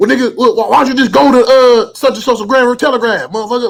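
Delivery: angry, mad voice at very high pitch. Retelling a friend's unasked-for suggestion: imitating a mad friend. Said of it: "why is he mad at you too?".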